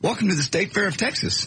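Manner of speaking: put-on thin, very high, squeaky kid announcer voice. Mocking the new state fair of texas announcer: squeaky young-sounding voice. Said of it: "They hire a guy that sounds like this. ... this little squeaky, sounds like about eighteen years old kid".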